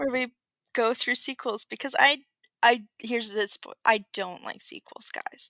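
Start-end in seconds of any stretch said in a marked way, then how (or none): 3.9-5.5 sarcastic, ironic, breathy half-whisper. Joking about sequels on a podcast that goes through sequels: sarcastic. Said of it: "That was sarcasm".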